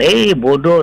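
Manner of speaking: high, loud, rude, jeering voice.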